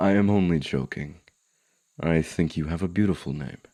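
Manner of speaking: friendly, kindly elf character voice. An elf speaks to someone it has just encountered, as a friendly elf. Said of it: "An encounter with a friendly elf".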